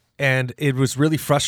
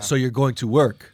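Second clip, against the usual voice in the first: imitated slight Portuguese accent. Retelling what mom said about going to DJ: imitating a slight Portuguese accent. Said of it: "That was that little accent".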